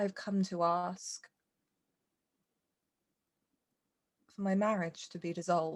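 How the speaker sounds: almost timid, nervous, tentative delivery. Voicing a nervous character asking an old man to dissolve her marriage: timid, quiet voice. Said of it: "almost timidly, like she doesn't realize she's not speaking with her full voice".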